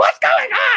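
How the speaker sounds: alarmed, high-pitched mom voice.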